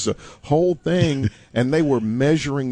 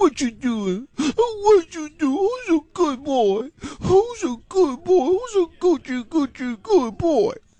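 put-on very high, drawn-out baby talk. Explaining how people talk to their pets, demonstrating baby talk to a dog. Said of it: "if you hit them with the baby talk".

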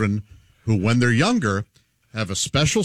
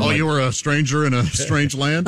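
ordinary talk

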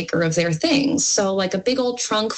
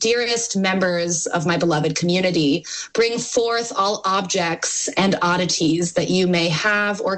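plain

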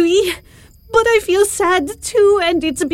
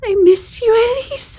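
words spoken through tears, tearful crying voice; 4 semitones higher than usual. Speaking to Elise right after being told to stop crying; crying. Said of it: "I don't know why I'm crying so much".

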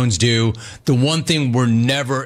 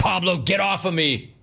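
ordinary talk, nothing marked

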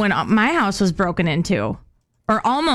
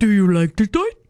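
put-on dog voice; 3 dB louder than usual. Narrating a story about an intruder, voicing the dog offering a toy: Nash's dog voice. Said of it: "I don't know why Nash talks like that".

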